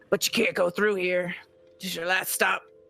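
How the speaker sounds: fantasy hobgoblin creature voice. Voicing a hobgoblin who, with a bandit, spots the players; hobgoblin voice. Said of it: "This is a hobgoblin voice".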